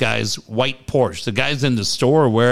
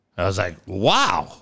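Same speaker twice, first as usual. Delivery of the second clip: ordinary talk, nothing marked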